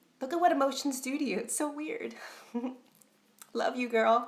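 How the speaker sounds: tearful, crying voice. Unexpectedly moved upon seeing a friend's name, crying, choked up. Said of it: "I don't know why I'm crying".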